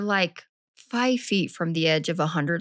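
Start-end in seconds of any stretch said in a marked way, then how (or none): none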